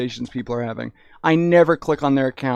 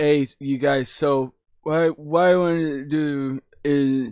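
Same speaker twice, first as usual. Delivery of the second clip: mock drunk speech, slow and slurred. Imitating own earlier recorded voice: imitating own slurred drunk speech. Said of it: "it's just a lot slower and it sounds stupid".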